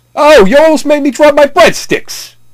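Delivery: very high-pitched put-on tough-guy voice. Demonstrating a requested line in a wise guy voice. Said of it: "If you were to speak in a wise guy voice".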